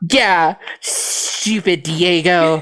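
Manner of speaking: angry yet smiling voice. Voicing a role-play character talking about diego, angry but smiling. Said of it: "voice is angry, but you're smiling a little".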